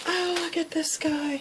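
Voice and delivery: high, gasping, delighted.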